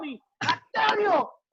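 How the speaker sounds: put-on grandma voice, high, drawn-out scolding yell. Retelling grandma yelling at the speaker, a crying kid: imitating grandma yelling. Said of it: "she's yelling at me".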